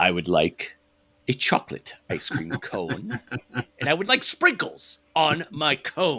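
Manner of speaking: slow, swooping, sinister evil villain drawl. Mocking how a woman delivers every line, mock stereotypical evil delivery. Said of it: "that stereotypical evil delivery of everything".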